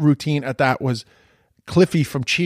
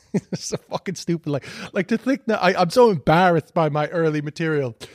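ordinary talk, nothing marked

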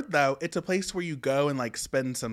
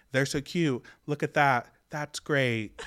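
put-on dead-level monotone, no pitch swing at all; 2 semitones lower than usual. Recapping the premiere, mimicking Albie watching Lauren and Vito kiss, Albie's monotone voice. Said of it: "the most monotone voice ever".

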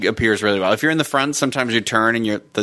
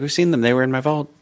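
dark witch character voice; 3 semitones higher than usual. Retelling what Bellatrix says on entering her vault: imitating Bellatrix's way of talking. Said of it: "she's like".

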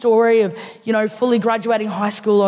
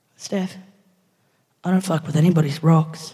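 put-on earnest, serious, heartfelt tone, lower; 4 semitones lower than usual. Retelling a friend's reply about her rocks: imitating an earnest, serious reply. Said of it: "with the most genuine, serious, heartfelt, earnest response".

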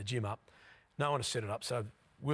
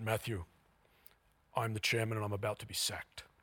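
put-on loud, booming voice. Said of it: "he had this unbelievably booming voice".

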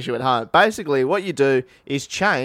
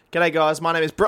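normal talking voice

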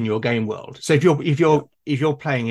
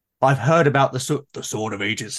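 dramatic, grandiose put-on player voice. Voicing a hypothetical player declaring a quest: grandiose player voice. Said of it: "it has to be said in that voice".

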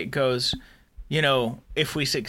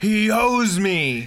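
screaming, pitched higher and louder; 7 semitones higher, 5 dB louder than usual. Retelling a scene where Shran screams into the monitor: Shran screaming. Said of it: "he screams into the monitor".

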